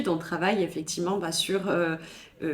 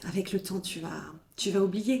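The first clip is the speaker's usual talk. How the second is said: put-on condescension, quieter; 5 dB quieter than usual. Mocking the advice people give about moving on from grief, mock condescending tone. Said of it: "avec un ton condescendant que j'adore".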